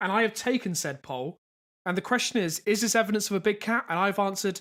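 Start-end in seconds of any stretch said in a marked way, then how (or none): none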